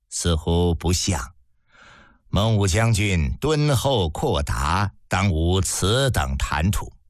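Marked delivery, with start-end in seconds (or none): none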